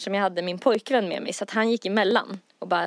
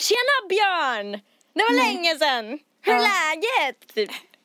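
mock tipsy, jolly, drunken cheery shout, very high; 9 semitones higher than usual. Retelling going up, drunk and glad, and shouting hello to björn: retelling a drunk happy shout. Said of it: "går ändå fram och skriker till här".

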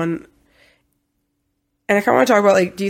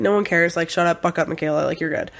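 ordinary talk

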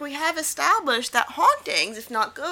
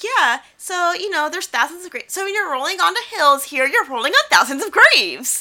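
put-on cute, loud, very preppy girl voice; 3 semitones higher, 6 dB louder than usual. Retelling a girl's line from a show, imitating Allison's preppy voice. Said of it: "very preppy voice".

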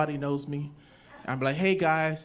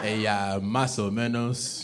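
put-on Spanish spoken with Igbo accent, lower pitch; 7 semitones lower than usual. Retelling answering in Spanish when asked about Igbo: Spanish in an Igbo accent. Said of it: "I speak Spanish in the Igbo accent".

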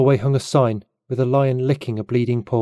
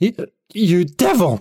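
put-on drunken, high outburst snapped on a hiccup; 7 semitones higher than usual. Samuel, after a night of drinking, snaps at a stranger on a hiccup. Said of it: "Samuel snapped to attention on a hiccup".

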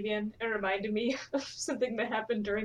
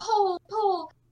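mock yell, much higher than normal voice; 10 semitones higher, 6 dB louder than usual. Recounting a run past cement poles, imitating people yelling a warning. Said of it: "people would just keep yelling".

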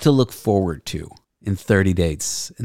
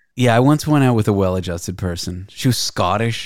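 usual speaking voice

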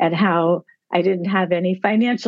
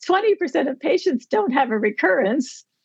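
cheerful, sunny, bright, pitched-up happy voice; 8 semitones higher than usual. Retelling what a woman said that upset her, mimicking someone's happy voice. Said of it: "She said in her happy voice".

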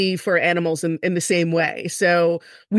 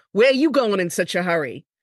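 put-on Long Island cop voice. Retelling what a cop said when pulling over a speeder: Long Island accent. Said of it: "he's pure Long Island".

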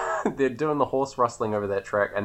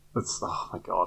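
usual speaking voice

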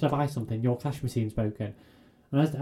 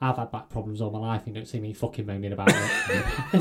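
dry deadpan delivery with swinging pitch; 3 semitones lower than usual. Retelling what a straight-laced colleague said to the speaker: retelling a deadpan remark. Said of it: "very straight-laced and deadpan".

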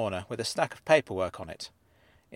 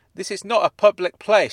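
very loud, full-throated, shrill shout; 8 semitones higher, 10 dB louder than usual. She argues back at the young man who muttered at her: shouting. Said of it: "she shouted".

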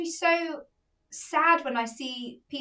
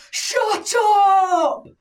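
very loud, high shout, stretched out upward; 6 semitones higher, 9 dB louder than usual. Retelling a passenger's remark from the back of a plane: imitating someone shouting. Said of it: "hear someone shout from the back of the plane".

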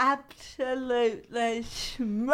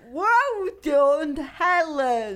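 snide bitchy sarcasm, higher and louder; 4 semitones higher, 5 dB louder than usual. Answering a promise to stay professional: sarcastic and bitchy. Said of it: "That was sarcastic and bitchy".

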